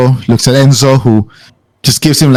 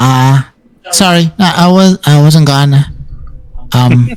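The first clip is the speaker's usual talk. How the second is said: put-on child character voice; 3 semitones higher than usual. Voicing a kid who lowers his gun and apologizes: voicing a kid. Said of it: "the kid just kinda, like, lowers the gun, goes like".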